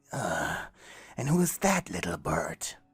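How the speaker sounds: ghostly, swooping, hissed voice. Narrating a ghostly man approaching you, voicing his question in a hiss. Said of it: "The ghost hissed".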